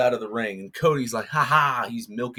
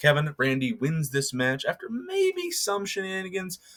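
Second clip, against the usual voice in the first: ordinary talk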